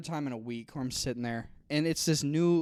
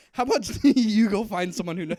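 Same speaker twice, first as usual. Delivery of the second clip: very loud, high voice, laughing through the words; 7 semitones higher, 9 dB louder than usual. Retelling the same comeback as it was said: retelling a line while laughing. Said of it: "I was laughing while I was like".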